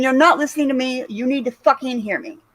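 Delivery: ordinary talk, nothing marked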